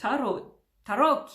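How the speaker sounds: put-on Italian accent.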